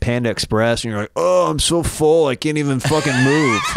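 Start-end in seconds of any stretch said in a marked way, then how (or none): 1.2-3.6 slow, drawn-out voice with stretched words. Imitating the other speaker after eating at the mall: impression of the other speaker. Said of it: "That's a good me impression".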